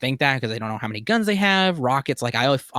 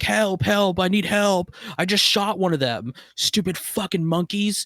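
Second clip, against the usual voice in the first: mock, high-pitched screamed cries, full of alarm; 7 semitones higher than usual. Recapping a movie scene, imitating Carver screaming. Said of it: "Carver is screaming like".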